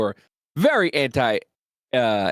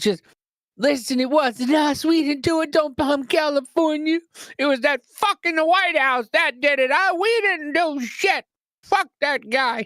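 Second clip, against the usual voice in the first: put-on very high, frantic, panicked old-lady pleading; 13 semitones higher than usual. Speaker retelling an old lady he saw, imitating a panicking old lady. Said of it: "I saw some old lady freaking out".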